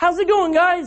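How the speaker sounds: put-on high-pitched Cork accent. Retelling Jesus meeting the guys three days later: Jesus in a Cork accent. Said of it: "With a Cork accent".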